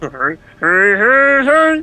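very high, loud cartoon voice, each "hey" stretched out. Told he sounds like Fat Albert, he answers in a Fat Albert voice. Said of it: "this is not a Fat Albert from my childhood".

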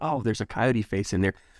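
ordinary delivery

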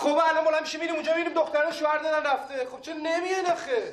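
high-pitched shouting.

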